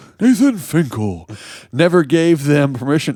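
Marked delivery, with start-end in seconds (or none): 0.2-1.3 wrestling ring announcer voice. Reading a news story aloud, announcing a name: the Fink announcer voice. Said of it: "That's my impression of the Fink, uh, W W E wrestling announcer".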